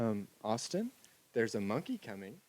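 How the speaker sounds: sweet little voice, soft and very hushed. Retelling what Amy said from the balcony door, imitating Amy's sweet soft voice. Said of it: "in Amy's sweet little soft voice".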